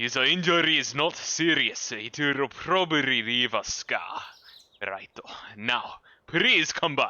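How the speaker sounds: put-on Japanese accent, character voice. Voicing a character's lines aloud, in a japanese accent. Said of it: "I haven't done a Japanese accent in forever".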